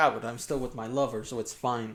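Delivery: ordinary delivery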